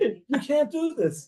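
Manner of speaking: acted-out, very high, stretched-out screaming. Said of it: "screaming at the cop".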